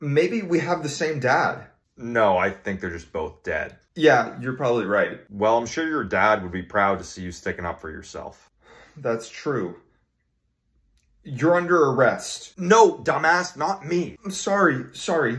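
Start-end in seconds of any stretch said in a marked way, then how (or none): 12.6-14.2 raised voice, drawn out, slow and deliberate. In a scene, answering another character, with a raised voice. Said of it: "Please don't raise your voice at me".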